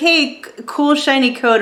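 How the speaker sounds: ordinary delivery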